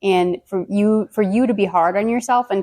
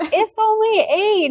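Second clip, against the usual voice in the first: mock high, shrill yell; 13 semitones higher than usual. Retelling a mother calling out the real time: imitating mom yelling. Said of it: "my mom yells".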